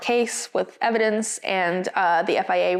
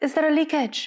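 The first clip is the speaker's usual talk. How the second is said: put-on heavy French accent, pitched up; 8 semitones higher than usual. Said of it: "heavy French accent today".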